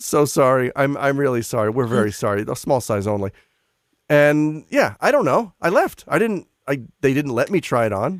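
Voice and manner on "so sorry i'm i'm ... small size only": put-on frantic, apologetic voice. Speaker retelling how shop staff refused a fitting, imitating a frantic apology. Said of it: "comes running over frantically".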